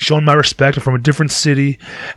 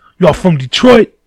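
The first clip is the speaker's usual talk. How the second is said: put-on total, thick, heavy New York accent; 4 semitones higher, 3 dB louder than usual. Retelling a guy asking about your Detroit hat, in a total New York accent. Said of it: "Fucking total New York accent".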